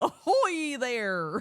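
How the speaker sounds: clumsy, bad, silly, daft cartoon dog voice. Asked for an ahoy like Disney's Goofy, do your best in a terrible Disney Goofy voice. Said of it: "Ahoy, but in a Goofy voice?".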